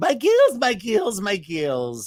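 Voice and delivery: put-on high, swooping, slow, drawn-out Scottish accent. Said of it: "with their Scottish accent".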